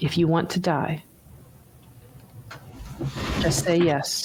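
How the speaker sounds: soft, hushed whisper, close to the ear. Game narrator voicing a bird that leans in to a player's ear, whispering. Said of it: "The bird whispers into your ear".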